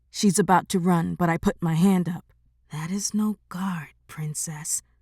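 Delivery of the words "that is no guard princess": quiet hushed tone, quieter. Reading a story aloud, warning the princess about a growl: hushed voice. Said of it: "I say in a hushed voice".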